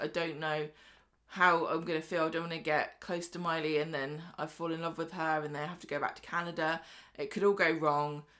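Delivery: ordinary delivery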